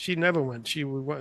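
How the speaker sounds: normal talking voice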